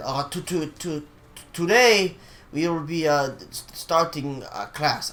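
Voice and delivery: slow, hesitant, halting stammering stutter. Retelling how a teacher started class, imitating his stutter. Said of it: "he stutters like that".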